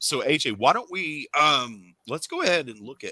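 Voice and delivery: voice cracking. Sick with flu, asking a helper with a camera to show books, voice cracking. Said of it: "my voice just cracked like a thirteen year old boy".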